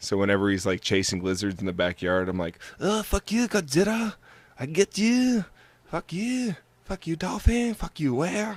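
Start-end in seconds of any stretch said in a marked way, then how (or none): 2.8-8.6 put-on Japanese accent, pitched way up, slow, drawn-out. Acting out voicing his dog chasing lizards, in a mock japanese accent. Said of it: "I give my dog that accent".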